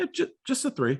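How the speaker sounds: mock very high, breezy, casual offhand throwaway. Retelling a show moment where a philanthropist is questioned: imitating Marty's casual reply. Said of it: "just casual".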